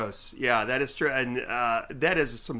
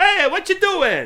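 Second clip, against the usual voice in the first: put-on very high, very loud, shrill bad Italian grandma accent; 11 dB louder than usual. Speaker pictures someone as a little Italian grandma: put-on Italian grandma accent. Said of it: "an Italian impression".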